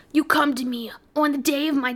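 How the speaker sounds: raspy movie mafia don, mob boss voice. Quoting a movie scene the speaker was making fun of, mob boss impression. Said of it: "He's like".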